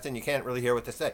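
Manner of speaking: fast, rattled-off talk with a northern sound. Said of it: "somebody from the north that talks really fast".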